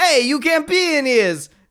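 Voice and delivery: put-on Brooklyn accent, high pitch. Retelling a scene, the speaker voices a man with a Brooklyn-y accent. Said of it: "this guy kind of has this Brooklyn-y accent".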